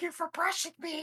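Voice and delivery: tiny, squeaky, very high-pitched voice. Describing an imagined clean tooth that talks, in a little tooth voice. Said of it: "the tooth has a little voice".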